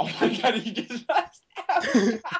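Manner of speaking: high, slowed laughing. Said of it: "why are you laughing".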